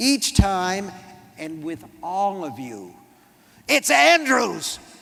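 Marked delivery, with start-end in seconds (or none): 3.7-4.8 roaring, rough, high-pitched bellow. He is called by the wrong name and corrects it, bellowing. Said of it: "He bellows it".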